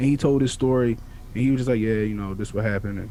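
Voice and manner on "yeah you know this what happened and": put-on flat nonchalant monotone, lower. Imitating a kid on trial telling his story: put-on nonchalant monotone. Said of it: "real nonchalant".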